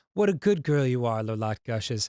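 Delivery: ordinary delivery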